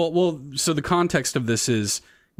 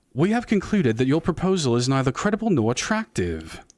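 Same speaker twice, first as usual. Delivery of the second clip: put-on British accent laid on, put on. Role-playing with friends, the speaker redoes a line in a British accent.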